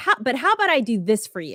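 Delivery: ordinary talk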